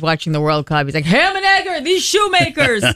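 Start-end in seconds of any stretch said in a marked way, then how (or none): 1.0-2.8 mock scream, much higher and slower. Imitating their dad watching the World Cup, imitating dad screaming at TV. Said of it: "he's screaming at the TV".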